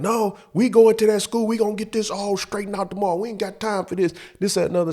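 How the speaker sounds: loud scolding shout, pitched high. Retelling how Mom insisted on going to the school: imitating Mom yelling. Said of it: "So she's yelling at me".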